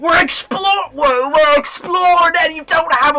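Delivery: put-on very high, loud, briefly slipped-in British accent. Asking another player in character why he has no bomb: slipped into a British accent. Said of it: "I went British there for a second".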